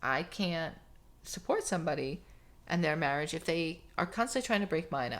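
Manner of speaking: ordinary talk, nothing marked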